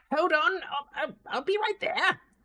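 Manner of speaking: high-pitched, loud gnome voice. Voicing a gnome calling from the back after the desk bell rings, high-pitched gnome voice. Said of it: "this kind of high pitch ish voice".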